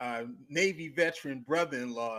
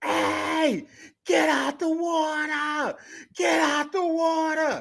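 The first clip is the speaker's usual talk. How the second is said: very slow, loud, high, drawn-out scream; 9 dB louder than usual. Retelling a warning to a man stuck in a rip current: imitating himself screaming. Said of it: "I start screaming".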